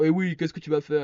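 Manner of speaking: put-on taunting macho tough-guy swagger. Retelling how he mocked a commenter's threat: mock-macho tone. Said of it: "je fais un peu le mascu".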